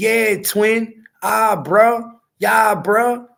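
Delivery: slow, drawled thug slang voice. Mocking slang he would hate to hear from his son: imitating someone talking like a thug. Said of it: "this dude talks like a thug".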